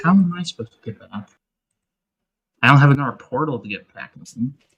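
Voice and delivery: muttering under the breath, as an aside. Voicing a character stranded without a portal: muttering under breath. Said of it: "my character just says under breath".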